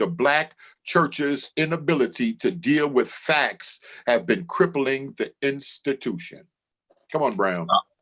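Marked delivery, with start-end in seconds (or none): 0.0-6.4 slow, drawn-out, every word deliberate. The speaker rereads a quote slowly for the back of the church. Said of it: "I'm gonna read it again slow for the back".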